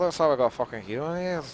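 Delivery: put-on, lowlife-sounding accent from the north of England. Showing how easy a scummy accent is: scummy northern English accent. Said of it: "I sound like a northerner, sound like that".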